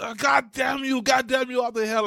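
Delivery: acted, very high-pitched, loud screaming. A speaker recalls Archer's Krieger losing his lab, imitating Krieger screaming. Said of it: "and he's like screaming".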